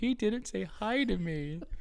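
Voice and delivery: very high, very slow, drawn-out put-on sob. Retelling what a three-year-old in the back seat said: imitating a child fake crying. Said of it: "She's, like, fake crying. She's all upset".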